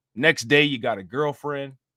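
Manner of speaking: plain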